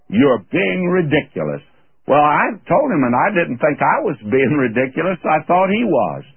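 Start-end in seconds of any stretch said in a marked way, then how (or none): 0.1-1.6 put-on haughty, dismissive, disdainful voice with British accent. Speaker retells what a man told him, mock-disdainful British voice. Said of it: "in that British disdainful voice".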